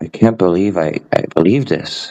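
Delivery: heartfelt, genuine-sounding, sincere and earnest delivery. Imitating a man whose voice was quiet: quiet, sincere-sounding imitation. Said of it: "I'll try to imitate his voice. It was quiet".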